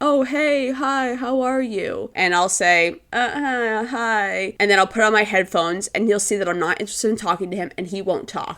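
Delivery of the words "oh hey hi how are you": meek, sheepish, timid, very slow voice. A woman imagines sitting next to Clint on a flight, imitating Clint's meek hello. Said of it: "he would start off with a kind of meek".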